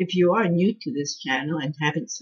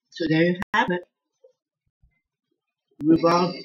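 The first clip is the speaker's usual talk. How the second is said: mouth full of food, louder; 4 dB louder than usual. Wrapping up a taste test after a bite, talking with mouth full. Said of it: "I can't talk with my mouth full".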